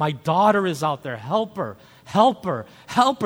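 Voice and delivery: frantic, desperate, pleading scream. Retelling calling out for help for a daughter beyond the waves: retelling a desperate scream. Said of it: "I started screaming like her father and said".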